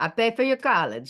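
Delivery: put-on deep Greek accent. Retelling father's warning before college: imitating father's deep Greek accent. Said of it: "big, deep Greek accent".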